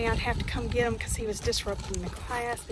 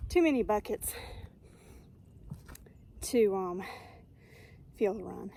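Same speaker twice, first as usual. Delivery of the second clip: winded, lower pitch and quieter; 3 semitones lower, 4 dB quieter than usual. Carrying a heavy bucket up a steep hill, out of breath. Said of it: "Sorry, I'm out of breath".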